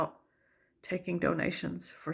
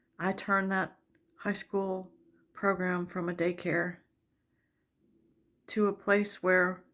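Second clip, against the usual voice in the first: choked-up voice catching with emotion. Describing the high school program she built, the speaker becomes emotional. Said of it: "Sorry, I'm so emotional".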